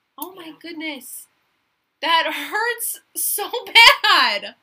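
very loud, high-pitched, giggly talking. Reacting after mentioning Kim, giggling. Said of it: "this is me giggling out".

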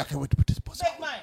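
soft, slight whisper. Quoting what they say, delivered in a slight whisper. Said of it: "They say it like that, too. That. Like a little slight whisper".

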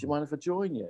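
put-on Mancunian accent. Retelling what a stranger in the pub backyard said: imitating a Mancunian accent. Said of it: "a kind of Mancunian accent came over and said".

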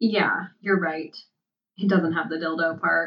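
usual speaking voice

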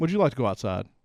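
eerily composed, polite, acted, almost too calm. Retelling what the quiet guy said to the other man: imitating a very calm voice. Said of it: "like very calmly, and almost too calm".

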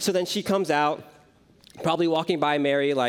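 ordinary talk

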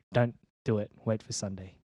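ordinary talk, nothing marked

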